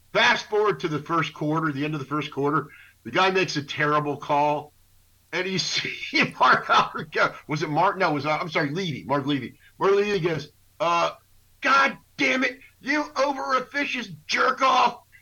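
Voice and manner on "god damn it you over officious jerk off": very high, furious, drawn-out screaming outburst. Retelling Marv Levy's reaction to a terrible call, imitating Marv Levy screaming. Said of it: "He's screaming".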